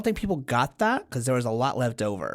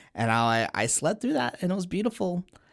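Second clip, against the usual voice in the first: normal talking voice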